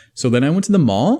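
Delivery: question-like rise on mall. Showing a statement that sounds like a question, rising pitch on mall. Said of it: "Sounds like a question".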